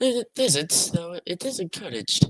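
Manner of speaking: put-on English woman's accent, high and slow. Voicing a character's reply to a question, in an English woman accent. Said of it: "What accent are you trying to do?".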